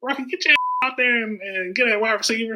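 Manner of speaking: distinct, high-pitched calling voice. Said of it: "he had a distinct laugh and a certain voice".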